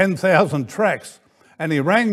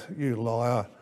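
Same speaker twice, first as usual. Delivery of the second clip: muttering, lower and quieter; 5 semitones lower, 11 dB quieter than usual. Retelling a quiet remark made about a companion in the car: imitating muttering under breath. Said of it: "And I said under my breath".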